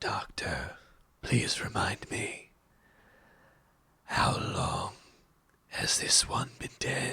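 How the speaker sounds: hushed, rattling whisper like a death rattle. Narrating a game, a dragon steps forward and questions the doctor, death-rattle dragon voice. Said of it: "his voice sounds like a death rattle".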